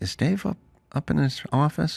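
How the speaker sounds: soft, high, timid, sheepish voice. Retelling a friend asking a segment producer: imitating a sheepish question. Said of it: "And Daniel got sheepish".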